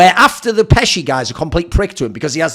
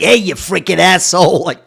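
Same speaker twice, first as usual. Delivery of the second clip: put-on film mobster voice. Recalling a dubbed film watched as a kid, doing a mobster impression. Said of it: "a mobster goes like".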